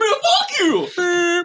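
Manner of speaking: very high squeaky, cracking voice. Repeating a line the group always yells: squeaky, cracky voice. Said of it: "more, like, squeaky, cracky voice".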